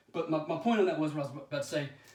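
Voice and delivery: ordinary delivery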